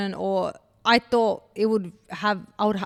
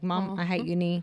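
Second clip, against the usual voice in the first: tearful, crying words; 3 semitones lower, 6 dB quieter than usual. Retelling telling Mum she hated uni, imitating her own past crying. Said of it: "I was literally crying to Mum".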